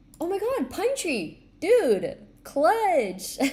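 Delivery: very high-pitched, thrilled, excited shouting. Reading out a giveaway winner's name, excited yelling. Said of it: "Sorry if I'm yelling".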